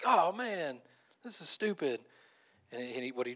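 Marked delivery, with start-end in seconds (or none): 0.1-2.0 fed-up, annoyed, upset, drawn-out delivery. Retelling a comedian's bit about a plane passenger losing wi-fi: acting out a guy getting upset. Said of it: "this guy gets all upset".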